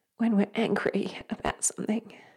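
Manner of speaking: emotional, close to tears.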